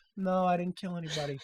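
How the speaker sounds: very hushed, quiet, eerily and unnervingly calm voice. Showing how an accused person is supposed to deny it, serial-killer calm. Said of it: "serial killer like calm".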